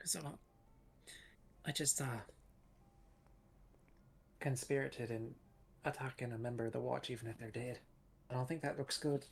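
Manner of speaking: quiet, soft, hushed confiding whisper. Voicing a character confessing to conspiring against the Watch: whispering. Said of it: "She's whispering".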